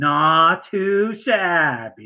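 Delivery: cheeky, sassy delivery with a drawn-out "not". Showing another way to say the catchphrase: sassy. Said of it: "the sassy".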